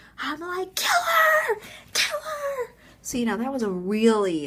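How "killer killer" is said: put-on, shrill, very high-pitched scream. Telling a story, the speaker re-enacts running into the street after the dog, retelling screaming a dog's name. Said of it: "I'm like screaming this dog's name".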